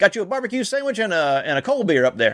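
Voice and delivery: fake, not-great Tennessee accent. A speaker retells a man inviting them up to a shelter, in a not-great tennessee accent. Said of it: "it was a Tennessee accent".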